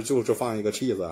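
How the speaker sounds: ordinary delivery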